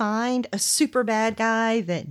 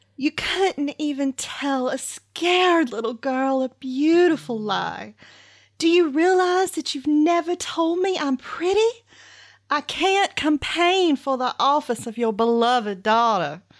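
acted, put-on American Southern accent; 3 semitones higher than usual. Asked to do her speech, reading a couple of its lines in a southern accent. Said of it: "Can you do it in Southern accent for me?".

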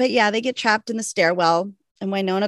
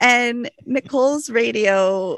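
ordinary talk, nothing marked

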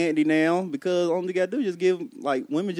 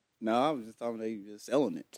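casual, offhand, nonchalant, very low and very quiet; 7 semitones lower, 9 dB quieter than usual. Clarifying a remark when asked about it, nonchalant. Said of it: "the way you said it was so nonchalant".

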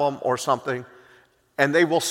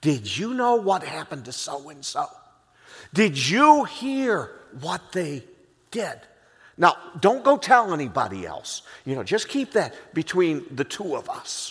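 put-on whisper. Acting out a gossip sharing a secret: imitating a whisperer. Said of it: "They're gonna whisper it to you".

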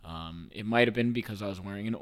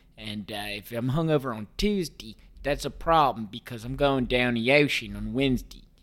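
local Baltimore accent; 2 semitones higher, 6 dB louder than usual. Showing how a baltimore person talks: baltimore accent. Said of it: "the Baltimore accent goes um, goes a little bit like this".

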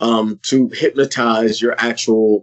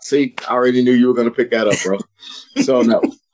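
ordinary delivery

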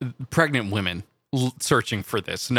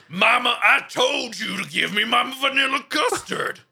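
put-on badly done, very high-pitched baby voice; 11 semitones higher than usual. Joking about feeding babies raw eggs, voicing a baby: bad Rocky baby voice. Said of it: "not a very good voice for Rocky baby".

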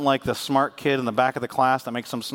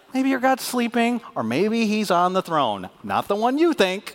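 swooping, mocking, sarcastic taunting tone; 8 semitones higher than usual. Retelling Elijah taunting people crying out to Baal: imitating Elijah's sarcastic taunt. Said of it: "That's sarcasm".

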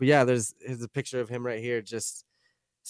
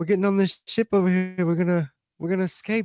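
put-on South African accent, much higher; 6 semitones higher than usual. Friends picking voices, doing the rock monster from Thor with a South African accent. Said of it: "Sounds like he's from like South Africa".

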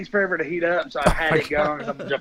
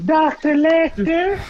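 put-on feminine voice, much higher and louder; 11 semitones higher, 4 dB louder than usual. Asked to say a name in a feminine tone; put-on feminine tone. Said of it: "speak in a feminine tone right quick".

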